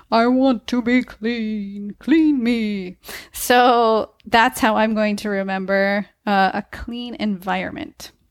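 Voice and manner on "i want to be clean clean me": deep, put-on talking-furnace monster voice. Voicing a fridge that asks to be cleaned: deep Home Alone furnace voice. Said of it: "say in a deep voice, like the one from the basement coal furnace in Home Alone".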